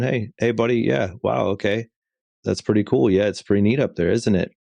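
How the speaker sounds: calm, soothing, relaxed tone. A parent acts out talking to their toddler on the roof, retelling a calm tone. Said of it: "with a just calm tone".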